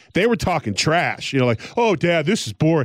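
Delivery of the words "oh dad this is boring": ordinary talk, nothing marked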